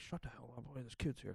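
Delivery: very quiet muttered mumble, under the breath. Retelling what his parents mumbled about a man cussing on the train: retelling mumbling under breath. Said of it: "mumbling under their breath like".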